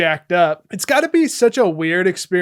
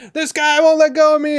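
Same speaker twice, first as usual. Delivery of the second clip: mock very high, frantic screaming child's voice; 9 semitones higher, 4 dB louder than usual. Recounting a film scene with the T eight hundred, retelling John Connor screaming. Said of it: "And he's screaming like".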